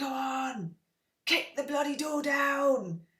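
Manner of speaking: goading, tempting little devil voice. Describing a devil and angel on your shoulder, voicing the devil-on-the-shoulder. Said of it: "devil and angel impression".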